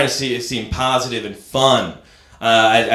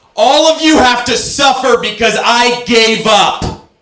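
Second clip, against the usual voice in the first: very high-pitched, loud, raised voice; 12 semitones higher, 7 dB louder than usual. Doing a run of impressions for listeners: impression of subway bike rider. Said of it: "That was my impression of someone bringing a bike on a subway".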